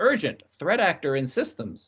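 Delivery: plain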